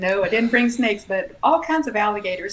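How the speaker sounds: normal talking voice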